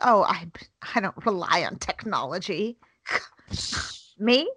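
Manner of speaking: slow, dragged-along voice. Retelling own past words to the others: Augie voice. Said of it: "you just used the Augie voice".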